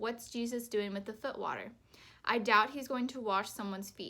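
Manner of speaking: usual speaking voice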